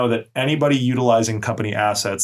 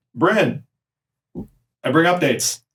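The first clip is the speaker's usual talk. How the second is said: commanding voice with raised pitch, fully authoritative; 6 semitones higher than usual. Game master voicing Commander Capon arriving downstairs with updates: commanding voice. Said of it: "you hear a very commanding voice".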